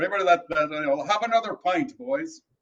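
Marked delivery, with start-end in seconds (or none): 1.0-2.4 clumsy, bad put-on Irish brogue accent. Pushed by another speaker to give an accent a shot, doing a bad irish brogue. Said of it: "I've got the Irish brogue going".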